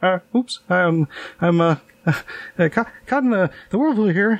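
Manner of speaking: put-on flustered mild panic. Retelling a sketch scene of slowly circling in a hot tub, imitating Kevin McDonald mild panicking. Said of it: "mild level panicking".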